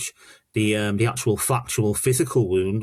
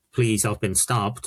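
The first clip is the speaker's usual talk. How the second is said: put-on pleading voice. Retelling a stabbed boy's words to the police: imitating someone pleading. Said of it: "he was pleading to the police".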